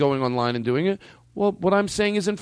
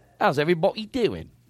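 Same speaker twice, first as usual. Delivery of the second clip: put-on London Cockney accent. Showing another speaker a greeting to copy: put-on Cockney accent. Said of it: "do the Cockney first".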